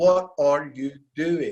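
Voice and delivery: put-on furious, fuming angry yell. Recounting when the sensei walked in on the students; retelling a furious shout. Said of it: "He just shouts like".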